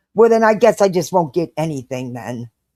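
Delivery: snarky, sharp tone. Retelling the daughter's reply in a store: imitating a snarky daughter. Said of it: "real, real snarky".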